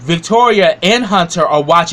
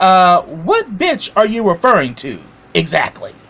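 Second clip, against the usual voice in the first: very smug, self-satisfied tone; 2 semitones higher than usual. Retelling a show scene where a character gets smug: imitating a smug reply. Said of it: "Donald starts getting real smug".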